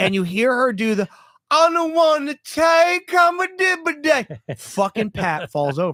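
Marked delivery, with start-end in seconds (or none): 1.5-4.5 garbled, made-up donkey babble, very high and slow. Retelling how she broke into her routine mid-trailer, imitating her donkey talk. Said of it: "she starts doing her fucking donkey talk".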